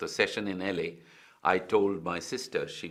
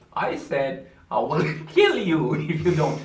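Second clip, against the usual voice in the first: put-on Indian accent, swooping and drawled; 9 semitones higher, 9 dB louder than usual. Retelling an actor repeating his line back in an Indian accent. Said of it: "change his accent to Indian".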